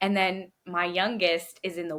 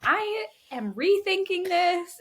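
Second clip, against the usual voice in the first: put-on high, squeaky, nervous little kid voice. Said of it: "is like".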